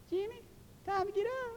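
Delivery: very high, hushed, soft, cute squealy voice. Recalling being woken for church, quoting her in a squealy, cute voice. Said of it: "It was squealy and cute".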